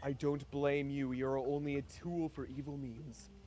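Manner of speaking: whispered line. Speaking in character to a dog: whispering. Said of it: "Valinith whispers to the dog".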